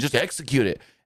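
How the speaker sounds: angry, insistent tone. Recounting one man yelling at another; retelling a yell. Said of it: "And he's like yelling at him".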